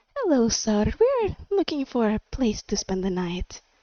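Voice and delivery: sugary, sweet, sing-song, flirtatious charm. Player character addresses the gnomish guy running the place, sweet-talking. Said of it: "I'm trying to sweet talk his ass".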